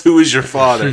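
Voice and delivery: abrupt, sudden yell out of nowhere. Discussing a scene, quoting a man who had been so professional: retelling a yell.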